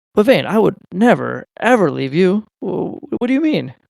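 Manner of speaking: swooping, teasing, mock-sincere sarcastic tone. Playing a character teasing a friend named Vayne: sarcastic in character. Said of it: "sarcasm they, thing they do".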